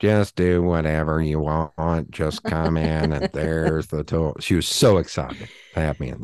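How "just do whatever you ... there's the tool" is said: completely toneless, slow, drawn-out monotone drone. Recalling a woman who told him to use the tools, imitating her monotone. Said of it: "She was also very monotone".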